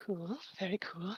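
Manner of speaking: very hushed, quiet mutter under the breath. A player reacts to the narrator's description of the scene, muttering under breath. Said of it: "I'm saying under my breath".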